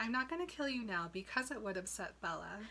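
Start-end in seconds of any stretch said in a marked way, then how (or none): none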